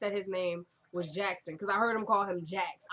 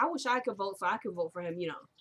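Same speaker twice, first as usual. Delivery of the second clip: ordinary delivery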